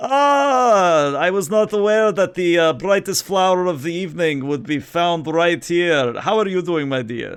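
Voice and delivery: put-on loud, jolly Slavic accent. Voicing Sava as he walks up to greet Bright Comet, in a joyful Slavic accent. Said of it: "he speaks in a very joyful Slavic accent".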